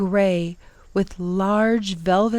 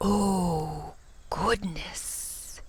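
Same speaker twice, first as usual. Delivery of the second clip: soft, deep, sibilant hissing creature voice, "oh" drawn out; 9 dB quieter than usual. A narrator reads a startled creature's words in a deep sibilant hiss. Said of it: "he hissed, his voice both deep and sibilant".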